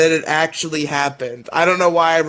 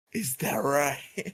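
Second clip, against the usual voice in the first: very quiet, hushed, menacing, scheming evil villain voice; 10 dB quieter than usual. Recapping an episode and repeating the character's reply; [name]'s evil villain voice. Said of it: "in the most evil villain, I am definitely a bad guy voice".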